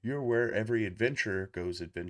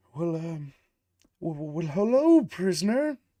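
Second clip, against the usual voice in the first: put-on kindly old man voice, higher, louder, slower; 8 semitones higher, 8 dB louder than usual. Narrating a prison scene, voicing a visitor greeting the prisoner in a kindly old man voice. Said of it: "This kindly old man".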